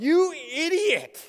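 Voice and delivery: very high-pitched angry yelling outburst. Recounting yelling at a dog in front of schoolchildren, retelling a yell at dog. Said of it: "And I yelled".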